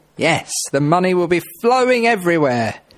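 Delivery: sarcastic, ironic tone, tongue-in-cheek, meaning the opposite. Radio presenter reacting to a small price cut, sarcastic. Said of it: "I'm being sarcastic".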